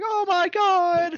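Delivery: very high, slow, drawn-out scream. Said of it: "literally screaming".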